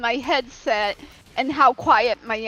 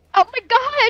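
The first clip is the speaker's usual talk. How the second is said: high, surprised little squeak; 11 semitones higher, 5 dB louder than usual. Reacting to being suddenly startled by the youngest: startled squeak. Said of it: "Sorry for squeaking".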